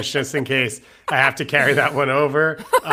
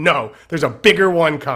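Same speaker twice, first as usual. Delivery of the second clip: plain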